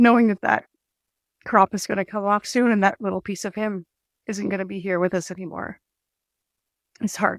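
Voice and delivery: emotional voice, struggling through. Talking about the man who did their combining for twenty years, getting emotional. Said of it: "sorry, I'm getting emotional".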